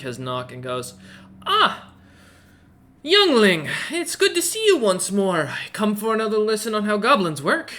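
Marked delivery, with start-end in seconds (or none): 1.5-7.7 put-on cheery, bright voice, high and raised. Voicing an old frost giant woman greeting a student: said with a big smile. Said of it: "puts on a big smile".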